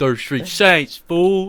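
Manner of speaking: mock tough-guy gangster voice, high, loud, jeering.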